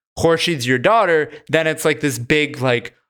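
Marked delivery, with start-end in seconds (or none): none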